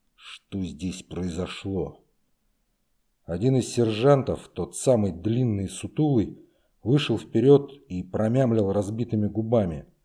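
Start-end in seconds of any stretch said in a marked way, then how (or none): 0.2-2.0 very quiet, low, forced through clenched teeth. The major looks over the mess hall after a fight and asks, through gritted teeth. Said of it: "процедил сквозь зубы".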